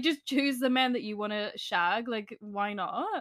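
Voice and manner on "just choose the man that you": ordinary delivery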